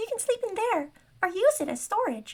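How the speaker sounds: very high, squeaky gnome voice. Reading a story aloud, voicing the gnome Bayabas in a squeaky Bayabas voice. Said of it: "Bayabas has a squeaky voice".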